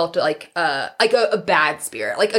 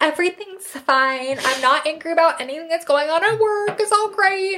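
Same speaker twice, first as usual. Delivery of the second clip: put-on Valley Girl voice, high and annoying; 10 semitones higher than usual. Describing how she answers when put on the spot, in an annoying Valley Girl voice.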